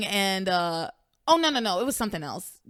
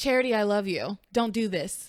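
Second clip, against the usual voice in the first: mocking flat monotone with falling cadence. Performing a line after being asked: imitating a flat, falling cadence. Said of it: "give me a line".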